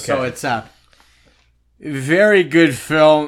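very slow, loud, drawn-out put-on drunk voice. Reading a film review aloud as if its writers were drunk, drunk voice. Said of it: "is to speak in a drunk voice".

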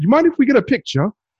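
clumsy put-on British accent. Retelling what a cop said to the speaker, in a terrible British accent. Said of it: "I'm going to do my terrible British accent right now".

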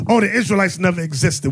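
ordinary talk

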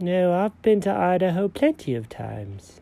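slow, drowsy sleep-talking voice. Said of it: "this cat has some weird dreams".

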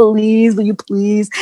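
acted-out pleading, begging tone. Retelling how Alok begged a store manager: imitating someone begging. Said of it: "And he's like".

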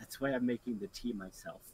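quiet, hushed stage half-whisper. Passing close to a companion in character, half-whispering in character. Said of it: "I whisper".

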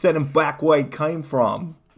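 full, loud Boston accent. Using a given word in a sentence, in a Boston accent. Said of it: "I'll say it in my Boston accent".

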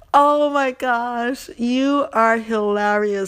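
cracking up, slow, laughing delight. Thanking a caller for being funny, laughing while talking. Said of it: "I am cracking up laughing".

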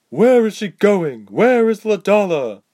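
very high, loud, forced through gritted teeth. A soldier, having just kicked Berg, asks again, through gritted teeth. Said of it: "the soldier tried again through gritted teeth".

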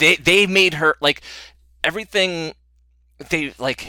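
high, loud, excited stammer, tripping over words. Speaker gushing about a show's villain, stuttering with excitement. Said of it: "I am stuttering because I just love her".

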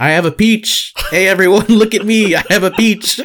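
mock very high, show-off, attention-grabbing yell. Speaker recalls waving back at a stranger on a New York street; retelling a yell. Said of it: "I just started yelling".

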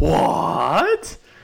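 sudden high, loud shocked outburst. Reacting to the claim that Lamar is not a great passer, mock-shocked. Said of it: "That was my shocked voice".

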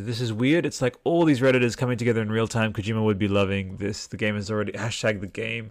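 ordinary talk, nothing marked

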